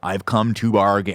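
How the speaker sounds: put-on bad American accent. Mocking an actor's accent in Doctor Strange: Benedict Cumberbatch bad American accent. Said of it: "We talk about the Benedict Cumberbatch".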